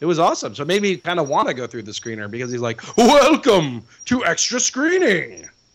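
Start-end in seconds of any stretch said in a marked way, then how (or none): 3.0-5.5 high-pitched, very slow, drawn-out delivery. Retelling a security guard's greeting: imitating a Festival of the Lion King actor. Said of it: "he actually talked just like him".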